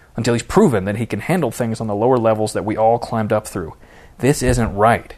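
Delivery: plain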